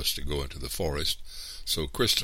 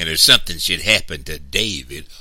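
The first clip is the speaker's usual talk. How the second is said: venomous hiss, much louder; 2 semitones higher, 11 dB louder than usual. Mr. Anderson speaks to Big Ma, hissing venomously. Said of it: "hissed venomously".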